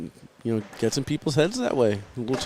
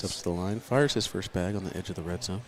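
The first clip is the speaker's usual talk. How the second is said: golf commentator voice, lower and quieter; 6 semitones lower, 7 dB quieter than usual. Commentating a bag game as agreed, golf-style commentary. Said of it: "do it like golf?".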